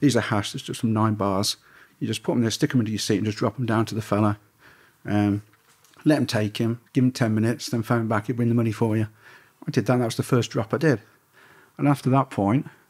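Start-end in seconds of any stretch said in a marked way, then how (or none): none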